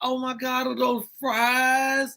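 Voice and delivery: high, teary, overwhelmed bawling cry, fries drawn out. Retelling a partner's reaction to a bag of fries: imitating a partner crying. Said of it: "And she started crying".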